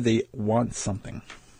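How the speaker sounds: ordinary talk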